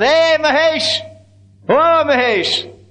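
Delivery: very slow, high, stretched-out yell. Retelling a story of a man on a bullock's back calling out; retelling a yell. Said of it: "jumps up on the back of the bullock and yells".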